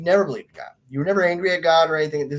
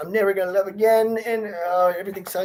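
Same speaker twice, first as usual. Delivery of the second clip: put-on sad, woe-is-me, heartbroken whine; 4 semitones higher, 4 dB quieter than usual. Acting out a dumped young person lying in bed: mocking a heartbroken dumped person. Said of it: "kind of mocking it right now".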